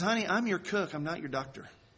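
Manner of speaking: thick, laid-on Southern drawl. Retelling a TV cook's answer to a health question; Paula Deen thick Southern drawl. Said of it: "in this thick Southern drawl".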